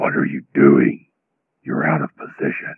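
very low, deep, guttural monster voice. Voicing a figure who steps forward and scolds the listener, guttural Ravage-like language. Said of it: "speaks to you in sort of a kind of a guttural language".

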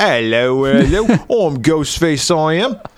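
high-pitched, put-on Cockney London accent. Imagining a horror remake set in another country, Cockney Ghostface voice. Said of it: "give them all Cockney France. Accents".

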